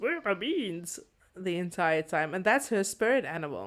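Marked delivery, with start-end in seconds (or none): 0.0-1.0 weird, odd cartoon guy voice. Imitating a purple princess spirit animal that keeps asking this: weird animated guy voice. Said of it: "speaks in this really weird animated guy voice that goes".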